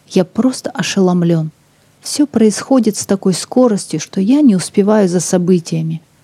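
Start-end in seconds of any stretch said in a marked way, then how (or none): none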